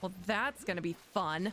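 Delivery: sarcastic tone. Playing a game after messing something up, remarking: sarcastic. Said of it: "I say, sarcastically".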